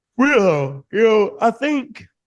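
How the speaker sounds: very high words stretched through a yawn. Speaker in a conversation, starting an answer, yawning while speaking. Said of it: "excuse me for yawning".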